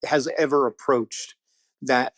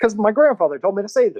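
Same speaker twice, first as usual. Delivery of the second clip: ordinary delivery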